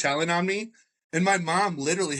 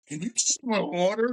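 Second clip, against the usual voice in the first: put-on drunk man voice, higher; 5 semitones higher than usual. Telling friends a story, quoting a drunk guy: imitating a drunk guy. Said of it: "like just like the drunk guy".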